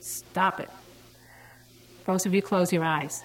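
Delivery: stern, firm, authoritative teacher voice. A former teacher recounting an incident, retelling own authoritative teacher voice. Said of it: "in my most authoritatively parental teacher voice".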